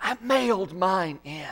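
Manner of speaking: theatrical stage whisper. Speaker retells a churchwoman telling people nearby at offering time, in a stage whisper. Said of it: "she would say in a stage whisper".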